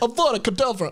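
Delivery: put-on Brooklyn accent. Speaker imagining how a bird character would say the spell, Falco's Brooklyn accent. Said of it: "he speaks with a Brooklyn accent".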